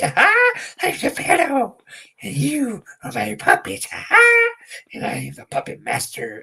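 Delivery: very high, sing-song, slow gimmick voice. Showing how the Geppetto wrestling gimmick talked: Geppetto gimmick voice. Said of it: "I would talk like this".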